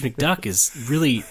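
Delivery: ordinary delivery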